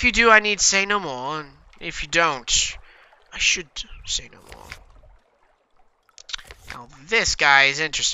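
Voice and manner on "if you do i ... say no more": polite, guarded, courteous, wary, haunted manner. Reading the haunted doctor's lines in a game, soft-voiced haunted doctor. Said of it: "The haunted doctor. What's dear? Please, I must leave this place. I can work my passage. I'm a doctor. / Soft-voiced, courteous, very wary of spiders. You can learn about him, but as this, but as yet".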